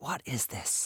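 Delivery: hushed, hissed whisper. Narrator voices a woman on the phone to Saul, hissing in a whisper. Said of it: "she hissed at him in a whisper".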